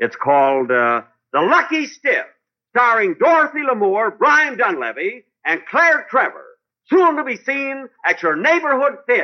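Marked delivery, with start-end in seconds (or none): 1.3-9.2 high-pitched, loud yelling. [name] announces his first picture to Jimmy, yelling. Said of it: "what are you yelling for?".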